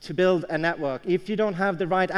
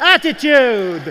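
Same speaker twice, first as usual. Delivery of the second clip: said with real passion, fired up; 6 semitones higher, 9 dB louder than usual. Speaker showing listeners how to greet the person next to them, said with real passion. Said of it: "You got to do it with more passion".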